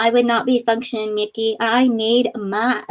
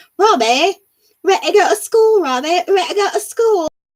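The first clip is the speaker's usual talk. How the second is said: fake English accent, high and loud; 8 semitones higher, 5 dB louder than usual. Retelling a prank where Lily passes as an exchange student: Lily's put-on English accent. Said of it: "Lily was speaking with an English accent".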